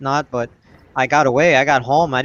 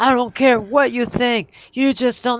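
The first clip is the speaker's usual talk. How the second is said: mock, very high, screamed, ranting outburst; 10 semitones higher than usual. Retelling a stranger screaming from across the street: imitating a man screaming. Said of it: "and he's screaming".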